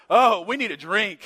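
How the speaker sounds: put-on jokey tone. Driving off to eat, retelling what a companion jokingly said, retelling a joking remark. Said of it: "jokingly says this right here".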